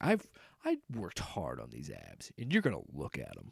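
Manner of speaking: deep, swooping put-on voice, very low and very quiet. Voicing a shirtless actor's imagined thoughts about his abs: deeper put-on voice. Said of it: "I don't know why my voice got deeper".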